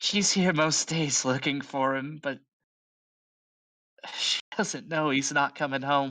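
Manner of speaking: whispered voice. Voicing a barmaid confiding to a player about Mel: whispering. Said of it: "kinda whispers in your ear".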